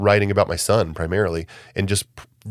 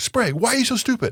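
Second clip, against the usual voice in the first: shrill, very high-pitched yelling. Retelling how the wrestling coach yelled at him in the gym: imitating a coach yelling. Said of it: "He's yelling at me".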